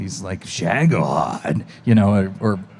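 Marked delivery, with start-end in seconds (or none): 0.4-1.6 repeated word with rising, questioning intonation. Showing how Snake asks questions: Snake voice asking a question. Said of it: "the problem with Snake is all he ever does is ask questions".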